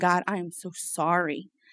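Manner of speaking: sobbing while talking. Recalling walking down stairs while someone fought for her life, retelling crying words. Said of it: "just crying and crying and crying and saying".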